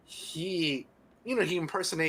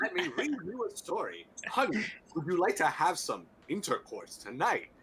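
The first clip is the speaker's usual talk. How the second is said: weird, strange news-anchor broadcaster voice; 3 semitones higher than usual. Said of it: "why are you speaking in such a weird".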